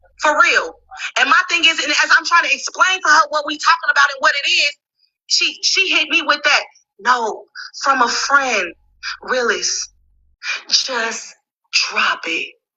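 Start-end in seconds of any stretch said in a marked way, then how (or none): 7.0-12.5 very slow, lingering, drawn-out, dismissive delivery. Retelling what she said during an argument, imitating AJ. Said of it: "a good impression of A J".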